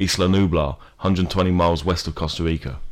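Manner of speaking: plain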